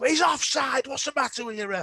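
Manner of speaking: mock outraged, very high-pitched, shrill indignant screaming. Retelling screaming at a referee during Sunday League football: retelling screaming at the ref. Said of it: "and I'm screaming".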